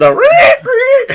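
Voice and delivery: very high, loud pig squeal. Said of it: "doing the pig noises".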